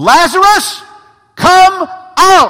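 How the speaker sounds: very loud, high, commanding cry. Reading a Bible passage aloud and acting out the call: acting out a loud cry. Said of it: "I'm gonna cry with a loud voice".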